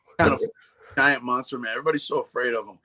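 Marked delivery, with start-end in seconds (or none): none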